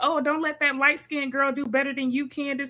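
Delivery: put-on breezy, light, playful teasing tone. Retelling what he said during a workout: imitating a playful tone. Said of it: "he used it in such a playful tone".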